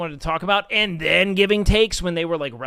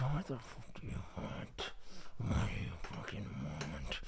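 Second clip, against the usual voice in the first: hushed, menacing, aggressive tough-guy dog voice; 11 semitones lower, 20 dB quieter than usual. Voicing a dog that always looks like it's mean mugging: voicing a mean-mugging dog. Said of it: "it's like he's mean mugging you".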